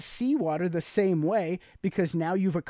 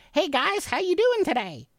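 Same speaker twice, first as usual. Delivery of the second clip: very high-pitched geeky, nerdy voice; 11 semitones higher than usual. Asking a woman which male voices attract her, demonstrating one: high-pitched nerd voice. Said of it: "like that high-pitched, like a nerd voice".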